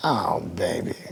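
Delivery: woman's crushed, heartbroken groan of disgust. Retelling a woman in the strip club crowd during the set: imitating a disgusted heartbroken woman. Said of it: "hearing this lady going".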